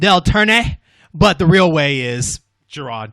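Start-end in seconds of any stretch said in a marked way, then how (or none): 0.0-0.8 a word said the Spanish way, Spanish accent. Pronouncing a name the way they like: Spanish accent. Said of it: "I like to pronounce it in a Spanish way".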